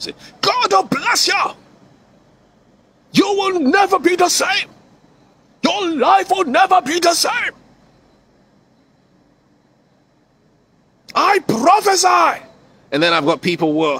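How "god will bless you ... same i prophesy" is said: raised, high preaching voice. Speaker acts out quoting scripture and prophesying over someone: raised voice. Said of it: "I should raise my voice".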